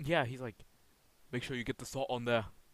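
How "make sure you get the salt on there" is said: words pushed out on a hard exhale. Imitating how a chef talks, exhaling hard: Gordon Ramsay impression, exhaling hard. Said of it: "how does Gordon Ramsay talk? He always sounds like he's, like, exhaling really hard".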